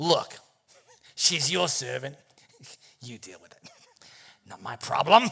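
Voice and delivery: put-on ordinary Australian bloke accent. Voicing a husband brushing off his wife's complaint: Aussie bloke voice. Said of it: "he could just be an Aussie bloke".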